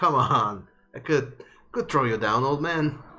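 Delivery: jokey, playful, goading, taunting teasing tone. Voicing a character jumping around playfully: playful taunting.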